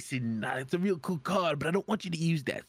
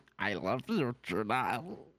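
creepy, low, slow possessed-creature voice; 4 semitones lower than usual. Speaker imagines a creature possessing a new friend, in a possessed creature voice. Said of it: "If anything did that voice at me".

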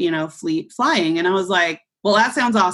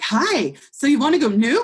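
eager, bubbling-over, all-excited, pitched-up voice; 8 semitones higher than usual. Retelling how a woman greeted him when he sat down, imitating her excited voice. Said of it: "And she was like all excited".

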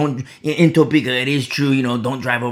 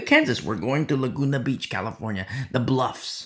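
normal talking voice

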